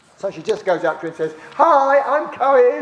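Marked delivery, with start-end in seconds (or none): 1.5-2.8 put-on sunny voice, higher and louder. Retelling how a team member greeted a woman in a supermarket: very sunny way. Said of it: "in a very sunny way".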